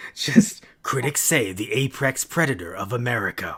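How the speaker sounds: big, dramatic movie-trailer announcer voiceover delivery. Imagining a movie's critic quote read aloud, use a movie trailer guy voice. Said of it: "I just imagine like a trailer guy voice".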